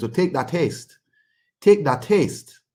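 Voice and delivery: put-on Montreal Haitian French accent. Speaker quotes a boxer's words in Jean Pascal's Haitian French accent. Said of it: "in his uh, Haitian French Montreal accent".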